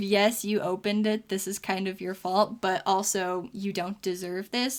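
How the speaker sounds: normal talking voice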